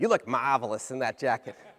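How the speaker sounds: put-on wonderful Italian accent. Retelling what a salesperson said about a leather jacket: Italian accent. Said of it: "in a wonderful Italian accent".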